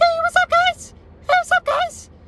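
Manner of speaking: put-on very high-pitched, squeaky teen voice. Recalling being eighteen, doing a squeaky eighteen-year-old voice. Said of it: "I was squeaky voice at eighteen, squeaky voice".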